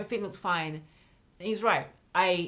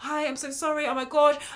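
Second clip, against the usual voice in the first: high, frantic, gushing voice; 7 semitones higher than usual. Speaker retells the voice note she sent him over a late payment, retelling a frantic apology. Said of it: "I was like frantic".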